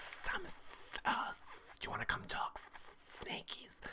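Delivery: whispered, hissing snake-like voice. Retelling how a player talked to another player: imitating someone hissing like a snake. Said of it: "starts hissing at her like a snake".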